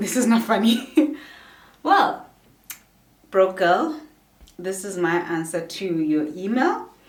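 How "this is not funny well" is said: laughing through the words, louder. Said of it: "Why am I laughing?".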